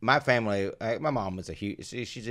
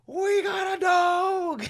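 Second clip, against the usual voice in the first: put-on very high, very slow, drawn-out excited scream; 6 dB louder than usual. Retelling spotting a dog bowl at home, reenacting screaming the news. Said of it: "I just start screaming".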